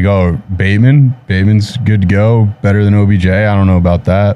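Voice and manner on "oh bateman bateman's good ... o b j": plain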